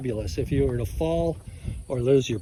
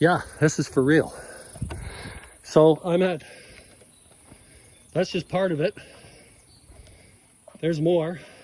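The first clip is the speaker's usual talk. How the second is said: winded, out of breath, breathless; 2 semitones higher than usual. Speaker wrapping up, saying there's much more, out of breath. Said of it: "I'm out of breath".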